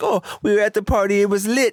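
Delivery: put-on Jamaican accent. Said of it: "and he was speaking like that".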